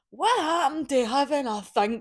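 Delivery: put-on Scottish accent. Quoting a Scottish TikToker's video line in a put-on Scottish accent. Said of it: "Don't know why I had to put a Scottish accent on".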